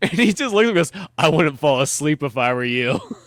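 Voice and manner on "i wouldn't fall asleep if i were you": put-on menacing tone, louder. Retelling how a character threatens a kid: imitating a menacing line. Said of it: "just so threatening".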